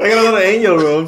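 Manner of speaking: loud, hyped, laughing cheer.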